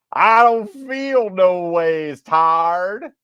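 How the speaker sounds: over-the-top fake Southern accent.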